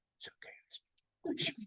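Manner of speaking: hushed whisper. Speaker quoting a man at their table answering their French, whispering. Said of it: "he whispers".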